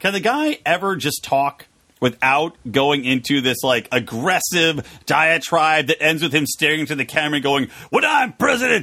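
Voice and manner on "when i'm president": blustery put-on voice. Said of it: "That's worse than my impression".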